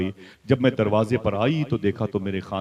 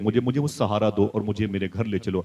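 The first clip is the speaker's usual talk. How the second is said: normal talking voice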